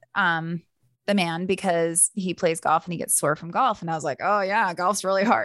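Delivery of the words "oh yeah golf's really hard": put-on teasing tone. Recounting teasing a man who gets sore from golf, the speaker acts out the teasing. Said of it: "like I was teasing him".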